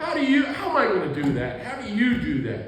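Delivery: high, loud disbelieving laugh-speech.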